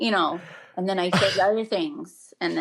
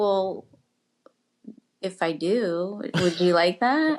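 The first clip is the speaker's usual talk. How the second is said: very seductive, sultry, come-hither voice. Retelling their reply to fans who asked about an OnlyFans, in a horny voice. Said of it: "your voice right there just sounded like super horny".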